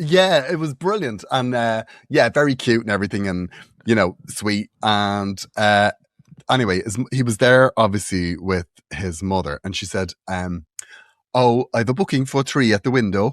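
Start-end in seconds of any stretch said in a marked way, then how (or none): 11.3-13.3 put-on Welsh accent. Telling Morgan what his mother said at the window, in a Welsh accent. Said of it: "Sorry about the Welsh accent".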